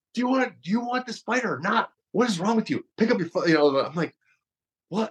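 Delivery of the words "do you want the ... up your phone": imitated yelling, much higher. Retelling a man yelling at them at their window; retelling a man's yelling. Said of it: "He starts yelling at me".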